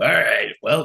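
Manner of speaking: defeated, sighing, resigned voice. Answering a defeated halfling in character: defeated, sighing. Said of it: "I give a defeated sigh back to her".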